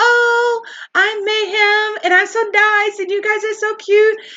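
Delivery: tiny, very high, squeaky cartoon-mouse voice. Describing a sneaky, nice woman to the room, imitating Mayhem's Minnie Mouse voice. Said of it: "this little Minnie Mouse voice".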